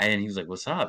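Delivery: ordinary delivery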